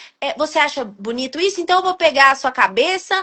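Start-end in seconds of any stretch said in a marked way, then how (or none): none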